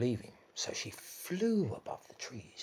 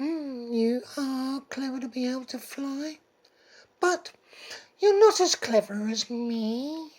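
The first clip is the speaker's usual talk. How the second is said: very high, loud, purring taunt, "me" stretched out; 14 semitones higher, 10 dB louder than usual. Reading a fable, Mister Cat taunts Missus Pigeon again; Mister Cat, purring taunt. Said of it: "[name] taunted, / Oh, [name] stroked his whiskers with one paw and pointed towards the sky and meowed, / [name] licked his lips and he purred".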